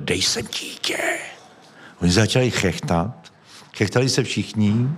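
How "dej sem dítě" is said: whispered creature hiss and breathy shriek. Retelling leaping onto the stage under a blanket during a show, retelling a hissing shriek. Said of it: "zasyčel jsem a zaječel".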